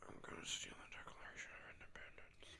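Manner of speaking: very quiet, breathy whispered mumble, lips barely moving. Showing how Nicolas Cage acts in National Treasure: mumbling Nicolas Cage impression. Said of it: "my lips barely moved there".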